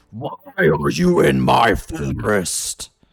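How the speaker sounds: very loud, very slow, swooping dragon bellow. Voicing a pissed dragon flapping above the party: dragon yelling. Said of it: "yells at you".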